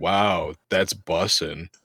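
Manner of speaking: mock-unenthusiastic flat tone. Retelling their reply to the kids they work with, retelling a deadpan reply. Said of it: "without any enthusiasm".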